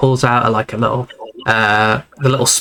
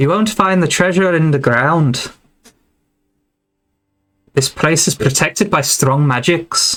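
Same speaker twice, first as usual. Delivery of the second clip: a woman's voice chiming in; 4 semitones higher than usual. Voicing a druid who calls out from behind a chair: female voice. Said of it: "a female voice pop-, pipes up".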